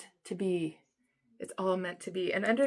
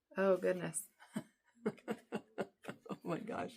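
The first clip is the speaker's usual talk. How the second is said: laughing while talking, quieter; 7 dB quieter than usual. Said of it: "I don't know why I'm laughing".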